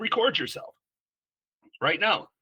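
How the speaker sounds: high, commanding coach voice.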